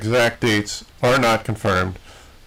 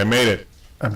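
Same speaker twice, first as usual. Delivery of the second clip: plain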